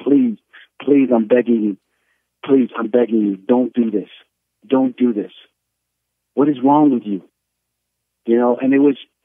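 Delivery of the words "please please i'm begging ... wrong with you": acted tearful, crying, pleading voice. Retelling how his wife grabbed his leg and begged: imitating wife crying and begging. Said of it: "She starts crying".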